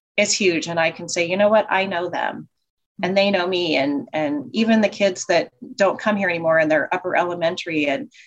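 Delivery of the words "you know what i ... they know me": ordinary delivery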